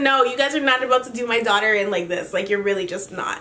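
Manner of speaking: plain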